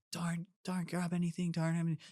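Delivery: put-on high-pitched yell. Retelling running back during a race as others yelled: imitating people yelling. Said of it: "everyone's, like, yelling at me".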